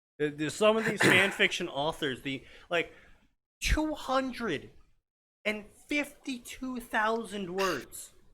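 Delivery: mildly angry, audibly upset grumbling. Talking about fan fiction authors to another person, upset. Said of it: "You sound just a tad upset".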